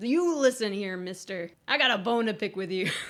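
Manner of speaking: put-on confrontational voice. Retelling how a movie captain confronts the Cloud: imitating an aggressive demand. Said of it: "really aggressive, like, right out the gate".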